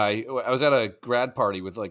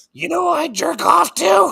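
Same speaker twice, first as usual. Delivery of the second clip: very high, louder put-on drunk voice; 7 dB louder than usual. Retelling how a man sounded once drunk, imitating drunk Greg's high voice. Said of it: "his voice went up eight octaves when he got drunk".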